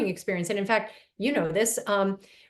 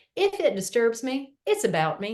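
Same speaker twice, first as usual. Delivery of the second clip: bad, badly done put-on Southern accent; 2 semitones higher than usual. Speaker quotes a woman's favorite phrase, in a bad put-on southern accent. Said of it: "I can't say this without the Southern accent".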